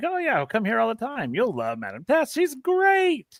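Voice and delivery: high, rattled-off squeaky chatter. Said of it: "really high-pitched voice".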